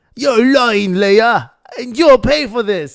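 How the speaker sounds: put-on loud British-accented villain voice. Imitating the video of Darth Vader's real voice: Darth Vader's real British voice. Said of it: "that video where he's like a British guy".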